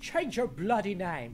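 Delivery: badly done, put-on British accent. Repeating a line for Hawk to judge, in a bad British accent. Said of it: "How's that for a British accent".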